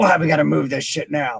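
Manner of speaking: mock grumpy, grumbling muttering. At load-in time, one speaker acts out the other getting grumpy: imitating a grumpy grumble. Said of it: "Then he gets all grumpy".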